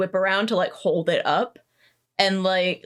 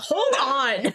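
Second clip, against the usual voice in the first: called out high and pitched-up while running; 6 semitones higher than usual. Voicing Dirk running while holding Henrietta: Dirk's voice while running. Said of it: "running as he's holding Henrietta and is like".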